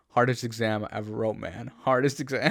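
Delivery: ordinary talk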